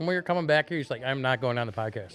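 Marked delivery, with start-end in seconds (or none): none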